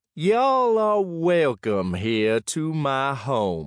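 high, drawn-out, lazy, languid drawl. Narrator reads a host welcoming guests to his home, stretched, languid voice. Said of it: "in a stretched, languid voice".

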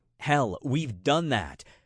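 ordinary talk

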